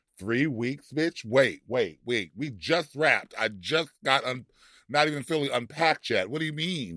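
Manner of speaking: plain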